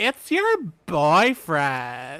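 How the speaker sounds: put-on loud, swooping girl's voice, done with gusto. Retelling a movie scene where a girl teases her friend: impersonating the girl. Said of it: "That was a good impersonation of that".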